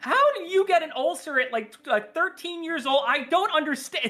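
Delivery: befuddled, baffled disbelief, very high voice. Retelling a TV mom's reaction in an episode: imitating a befuddled mom. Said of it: "she's just, like, befuddled".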